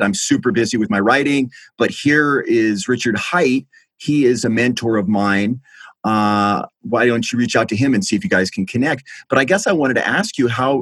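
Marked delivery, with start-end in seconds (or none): none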